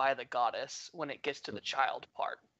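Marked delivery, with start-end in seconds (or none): 0.0-0.9 low, dropped mutter, to himself. Voicing a character reacting to a disturbing tape: muttered under the breath. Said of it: "under his breath say".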